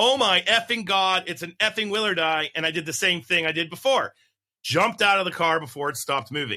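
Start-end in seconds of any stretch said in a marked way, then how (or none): 0.0-2.5 play-acted, half-strength, thrilled yelling outburst. Retelling spotting a rare rattlesnake from a car: retelling a yell. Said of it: "I yelled, as loud as I could".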